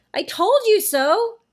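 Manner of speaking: shrill, very high, slow, drawn-out yell. After a cockroach is found in the dark corner, one child shouts in reply. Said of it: "shouted Janet".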